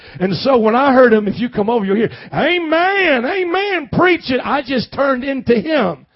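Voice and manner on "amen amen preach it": high, slow Kentucky preacher voice, "amens" stretched long. Telling about his mentor from Kentucky, the speaker imitates a Southern preacher. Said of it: "a Southern preacher from Kentucky".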